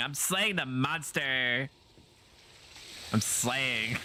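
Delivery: put-on giggling, slow, playful giggly voice. Retelling what she said while flopping around on his back, imitating someone giggling. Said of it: "giggling like an idiot and going".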